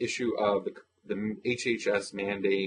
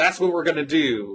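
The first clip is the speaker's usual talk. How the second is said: far too upbeat, cheery, high, loud, bright tone; 7 semitones higher, 7 dB louder than usual. Act out the reply to a man who spoke in a plaintive voice, imitating Romney's upbeat tone. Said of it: "a tone that was so many more times upbeat".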